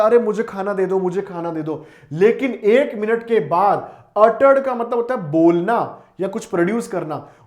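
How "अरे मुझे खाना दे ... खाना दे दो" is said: ordinary delivery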